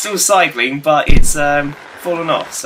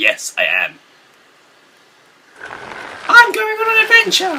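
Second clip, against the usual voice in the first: very high, swooping, lilting, slow, drawn-out voice. A gamer on a Hobbit level answers a question in a Harry Potter voice. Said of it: "Why do I sound like Harry Potter?".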